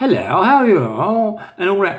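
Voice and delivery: plummy put-on posh voice, very posh and prim. Imitating an old acquaintance's way of talking: imitating Sam McCarthy's posh voice.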